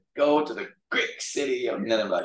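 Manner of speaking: put-on Cantonese-accented English with preaching cadence. Recall Sam Wu giving a message on Jonah when you were in choir, in Sam Wu's Canto accent. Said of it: "he would call it a great city to this Canto accent".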